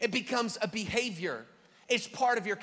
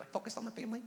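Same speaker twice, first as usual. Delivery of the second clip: dorky, nerd-style voice; 10 dB quieter than usual. Telling about an app, the speaker says its maker's name like a nerd. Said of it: "you're supposed to say that like a nerd".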